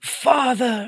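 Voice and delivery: high, drawn-out mock vampire whisper. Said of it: "The long whispers, like".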